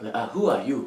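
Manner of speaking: imitated Nigerian accent. Speaker tries copying an accent after watching a film many times; put-on Nigerian accent. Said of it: "I feel like I can copy".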